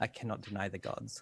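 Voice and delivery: whispering under breath. Voicing her character answering a sacrifice demand: whispering under her breath. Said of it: "she just whispers".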